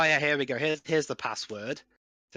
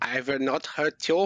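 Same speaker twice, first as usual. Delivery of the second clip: put-on fake German accent. Saying a line as a joke: put-on German accent. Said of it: "My German accent will".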